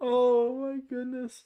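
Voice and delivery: very high words broken by hard laughing. Reacting to a friend's joke during a game, laughing hard while talking. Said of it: "I'm laughing so hard".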